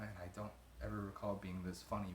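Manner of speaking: ordinary talk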